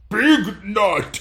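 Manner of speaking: booming monster bellow. Narrating a game, the speaker voices a creature bellowing at a player: bellowing. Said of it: "It bellows".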